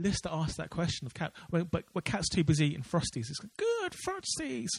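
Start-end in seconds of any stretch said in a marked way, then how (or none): 3.6-4.7 high, slow, bad put-on cat voice. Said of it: "Worst impression ever".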